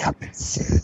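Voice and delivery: ominous, foreboding voice. Teasing a coming announcement to a co-host: ominous voice. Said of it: "This is my ominous voice".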